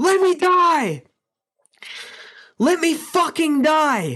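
play-acted, very high, desperate scream. Recalling what they screamed at the doctor trying to revive them, retelling a scream. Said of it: "I'm screaming at him".

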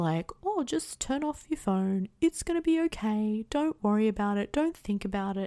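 mock voice, mocking tone. Complaining about generic tips for anxiety, putting on a mocking generic-advice voice. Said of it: "the voice I give when people give me really... Like generic tips".

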